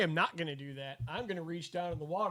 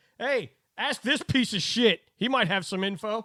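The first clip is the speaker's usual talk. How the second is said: loud hollering with raised pitch; 5 semitones higher, 4 dB louder than usual. Calling down the stairs to a character in the game: hollering down to someone. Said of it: "holler down there to Norbert".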